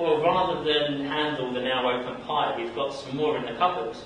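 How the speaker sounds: ordinary delivery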